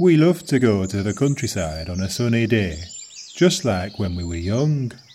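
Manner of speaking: northern Yorkshire dialect accent. Demonstrating northern accents with one sample sentence, in a Yorkshire accent.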